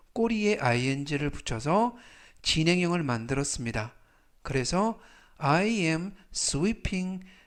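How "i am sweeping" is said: very slow, careful, drawn-out "am sweeping". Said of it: "나는 청소하고 있다".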